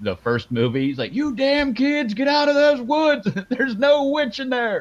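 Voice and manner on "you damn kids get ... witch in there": acted-out, very high, shrill, loud hollering. Describing a movie's opening, the speaker acts out the sheriff at the fans: imitating the sheriff yelling. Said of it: "he's yelling at all these people".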